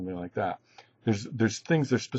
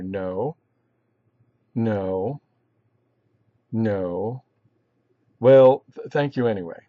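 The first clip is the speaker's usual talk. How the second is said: slow no, no, no with long pauses between. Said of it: "picture the pauses there".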